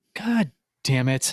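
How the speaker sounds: muttered under the breath. Retelling what she muttered while coloring at the kitchen table, under her breath. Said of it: "Under her breath, she goes".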